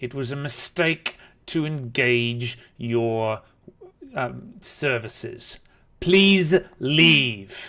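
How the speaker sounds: speaking through clenched teeth. Game master, speaking as a character, telling the party to leave: through gritted teeth. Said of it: "Through gritted teeth".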